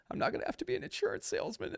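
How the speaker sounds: breathy, tearful whisper through crying. Retelling a quarterback's call to his parents after the draft: imitating Tom Brady crying. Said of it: "he's, like, crying. He goes".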